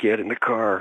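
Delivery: imitated shout, urgent. Retelling the moment the figures got close, telling companion to get in the car: imitating a shout. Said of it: "I shouted".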